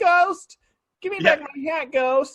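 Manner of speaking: very high-pitched scolding tone. Retelling how the man called after a fox that took his hat: imitating the man scolding a fox. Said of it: "He's like".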